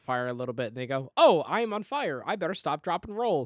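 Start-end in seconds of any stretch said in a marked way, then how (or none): 1.1-3.5 bad fake Russian accent, slow and high. Retelling what burning mobsters say, in a really bad Russian accent. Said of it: "In a really shitty Russian accent".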